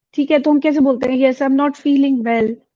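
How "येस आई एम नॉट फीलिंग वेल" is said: flat, level, unvaried, monotone delivery. Showing how people say they are not feeling well: flat, no pitch variation. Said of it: "कभी-कभी हम नहीं अच्छा feel कर रहे होते".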